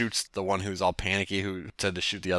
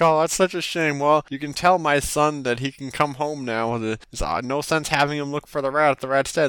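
acted-out weepy, sobbing delivery, high-pitched; 6 semitones higher than usual. Retelling a game scene where a townsman starts crying: imitating a crying man. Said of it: "And then the guy starts, like, crying".

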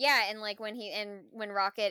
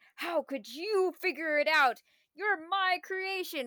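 put-on indignant, ticked-off angry villain voice; 8 semitones higher than usual. Retelling a film villain's reaction to being outsmarted: imitating angry High Evolutionary. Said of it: "he's ticked off".

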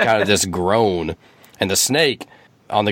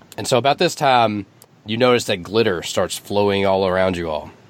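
normal talking voice

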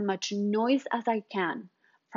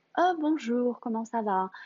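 restrained, unshowy, subtle speech in French; 2 semitones higher than usual. Contrasting how French people greet people: imitating a subtle French greeting. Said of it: "more subtle".

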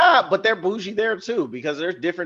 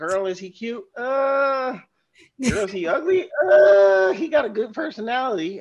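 much higher, loud mock-shocked girl voice. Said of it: "what an uh face is".

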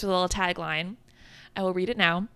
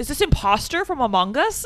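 silly, goofy put-on voice, pitched up; 6 semitones higher than usual. Retelling how a man in a video spoke: imitating a man's goofy voice. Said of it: "It's like".

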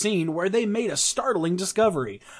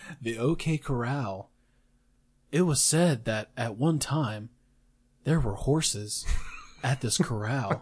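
mock monotone narrator voice, lower and quieter; 7 semitones lower, 5 dB quieter than usual. Mocking Facebook videos with a dull narrator: imitating a monotone narrator. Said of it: "It's so monotone".

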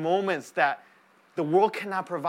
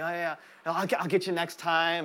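mock embarrassed voice. Acting out someone leaving after receiving a blessing, imitating an embarrassed goodbye. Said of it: "leave very embarrassed".

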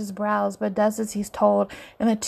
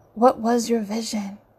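plain

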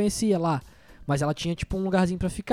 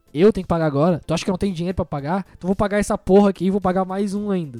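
ordinary delivery

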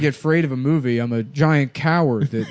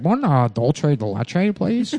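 slow, dorky, big-nerd voice. Retelling what a guy said to friends, imitating a big, fat nerd. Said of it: "like a big, fat nerd".

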